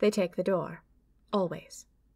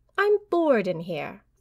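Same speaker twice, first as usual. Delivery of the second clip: pouting, sulking, complaining voice. The narrator answers a man waiting for his pen back, pouting. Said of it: "I pouted".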